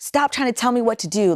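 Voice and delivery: mock prideful, angry little-kid voice. The speaker retells a moment of their old self, retelling getting angry. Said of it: "I started getting angry and I'm like".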